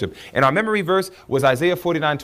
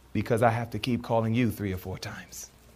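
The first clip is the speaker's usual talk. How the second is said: soft, low, gentle, still, sweet small voice; 4 semitones lower, 8 dB quieter than usual. Speaker voicing God answering a parent whose children don't come, God's sweet, still, small voice. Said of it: "in his sweet, still, small voice says".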